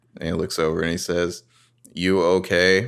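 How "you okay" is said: put-on condescending tone. Recapping a scene, the speaker acts out Toby asking Jenna, mock-condescending. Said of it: "There's a high degree of condescension here".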